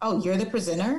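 surprised, skeptical, caught-off-guard, doubtful tone. Retelling what a PTA president said on a Zoom call: imitating a surprised doubtful tone. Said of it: "that was literally her tone".

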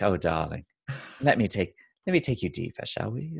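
put-on posh British accent. Recalling an interview with a British woman, imitating her, proper British accent. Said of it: "she's British".

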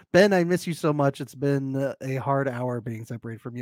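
plain

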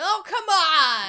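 very loud, high holler, "on" drawn out. Wishing for a comedic movie role, imitating Tom Hanks yelling. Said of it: "yells at the top of his lungs".

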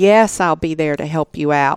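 ordinary talk, nothing marked

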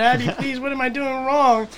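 mock, very high, drawn-out, blubbering crying whine. Telling a dream of Dan on the bank pleading with Abby, imitating Dan crying. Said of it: "crying, like this".

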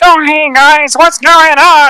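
very high, strongly nasal, drawling character voice. Voicing a carriage driver for a game: nasal carriage-driver voice. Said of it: "I did this nasally voice for a carriage driver".

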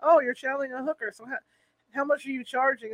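acted, deadpan flat delivery. Retelling what Dave said when Sabrina started talking: retelling a deadpan remark. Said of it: "Dave is so deadpan".

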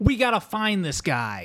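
put-on, imitated nasally voice. Describing a show character, quoting him in a nasally voice. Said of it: "a nasally voice".

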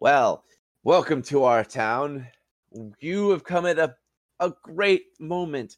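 genial, high, pleasant townsperson voice. Voicing a townsman welcoming newcomers to the town: smiling. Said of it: "He smiles and he goes".

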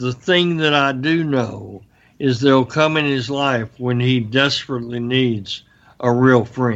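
plain

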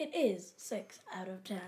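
phone voice-assistant style reply voice. Answering a conversion question as the phone assistant: Siri voice. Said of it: "That was my best Siri voice".

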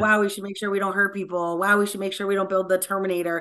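plain

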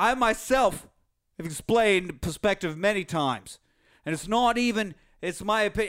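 sudden, put-on Australian accent. Reading out a comment about perspective: put-on Australian accent. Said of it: "I sound Australian for some reason".

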